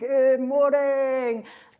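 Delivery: big, very loud, high, booming voice. Recalling being nervous on the first day, the speaker imitates Simon's greeting: Simon's booming voice. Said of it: "just with his booming voice".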